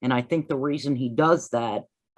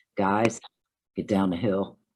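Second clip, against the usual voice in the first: put-on man's voice, pitched lower; 5 semitones lower than usual. Repeating words you have listened to probably a thousand times, imitating a man's recorded voice. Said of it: "that's when he says".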